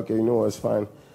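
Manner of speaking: ordinary delivery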